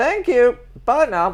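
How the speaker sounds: put-on English lady accent. Retelling a phone call about a delivered box, imitating an english lady accent. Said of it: "It's an English lady, so I'll do your accent".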